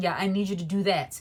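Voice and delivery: mimicked rude tone. Retelling how people spoke to them: imitating a nasty tone. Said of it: "the way they came off was very nasty".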